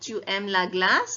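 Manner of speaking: rising tune with voice going up on glace. Teaching how to ask tu aimes la glace, rising pitch at end of glace. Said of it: "Your voice goes up towards the end of your sentence".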